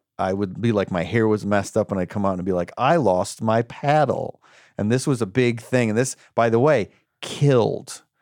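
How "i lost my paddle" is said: bad fake English accent, drawn way out, very slow. Retelling a line they delivered in a play, in a bad English accent. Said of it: "whatever my bad English accent was at the time".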